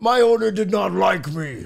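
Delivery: put-on monster voice.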